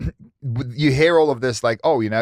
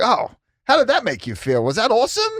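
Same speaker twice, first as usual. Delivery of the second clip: mock-cheerful, upbeat voice, pitched higher; 9 semitones higher than usual. Describing how they act around the house, imitating an upbeat praising parent. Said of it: "run around the house like".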